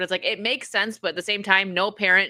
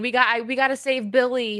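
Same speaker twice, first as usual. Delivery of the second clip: mock blubbering, high and tearful, pleading; 5 semitones higher than usual. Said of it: "crying and saying".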